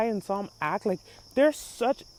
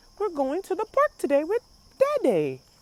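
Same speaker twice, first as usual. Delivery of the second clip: put-on high, sweet, innocent, sing-song small child voice; 8 semitones higher than usual. Imitating innocent little kids talking to their mother: imitating innocent little kids. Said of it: "they're Bluey type age".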